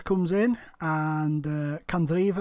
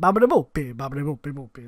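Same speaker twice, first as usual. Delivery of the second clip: mock Italian gibberish, louder; 4 dB louder than usual. Retelling a cartoon character faking Italian: mock Italian gibberish. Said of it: "he goes into the Italian butchers".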